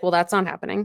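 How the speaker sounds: ordinary delivery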